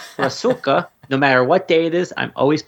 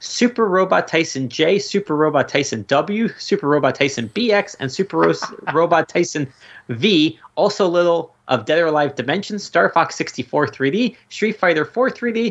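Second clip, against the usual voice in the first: rattled off rapidly, all in one breath, without pause; 3 semitones higher than usual. Speaker lists the games someone played, trying it all in one breath. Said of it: "I'm going to try and say this all in one breath".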